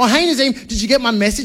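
annoyed, pissed-off, pointed tone with attitude. Nazeem recounting a phone call from an angry woman, mimicking her pissed-off tone. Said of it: "really pissed off".

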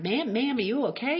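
put-on country Southern accent. Retelling what a country boy in a trucker cap said: imitating a deep Southern accent.

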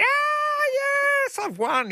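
drawn-out, very high-pitched, slow, fake excited scream. Showing a prize winner how to react on hearing she won: mock excited scream. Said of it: "You're supposed to scream like it's The New Price is Right".

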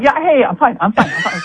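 high, nervous, twitchy, jittery voice.

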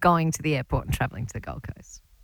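sarcastic tone of voice.

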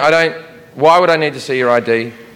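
ordinary delivery

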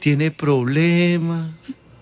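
slow, hesitant, mocking put-on voice. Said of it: "Pues así".

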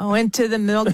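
bad, halting attempt at an Australian accent.

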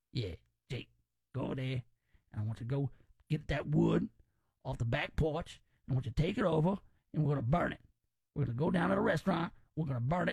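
put-on New Orleans accent, words rattled off quickly. Describing relatives, the speaker does Uncle Ray's New Orleans accent. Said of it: "Uncle Ray talk like this. Uncle Ray more like a New Orleans kind of guy".

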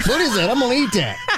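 very high, squeaky, chattering little fish voice. The speaker shows his impression of a fish, fish impression voice. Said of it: "That's my impression of a fish".

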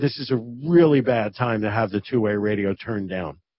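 ordinary talk

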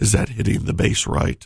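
playfully sexy voice. Radio host greeting sunday morning listeners, trying to sound sexy. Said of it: "I'm trying to sound sexy for you".

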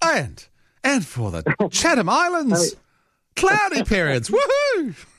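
very enthusiastic. Prompted to read the weather in that voice, the speaker reads it really enthusiastically. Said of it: "Really enthusiastic".

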